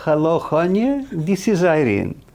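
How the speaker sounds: put-on very high, sing-song, lilting Polish accent. Retelling a phone call from Irene, imitating Irene's lilting Polish accent. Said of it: "I hear this lilting Polish accent".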